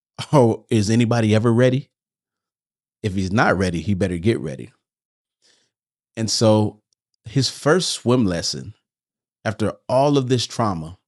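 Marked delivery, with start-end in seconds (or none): 0.3-4.7 calm, unruffled motherly voice. Retelling how a sister answered a worry: imitating a calm motherly voice. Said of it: "in her calm, motherly-like voice".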